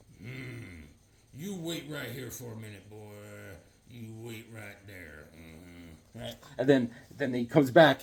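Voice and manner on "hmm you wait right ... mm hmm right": put-on low, hushed, murmured old cowboy voice. Acting out an old cowboy at a carnival talking to a boy: old cowboy voice like Sam Elliott. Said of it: "that Sam Elliott stare".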